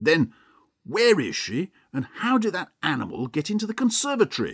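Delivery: angry, accusing tone, high and rising pitch. A husband questions the one he blames for his missing wife: angry questioning. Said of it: "asked Mr. Hampton angrily".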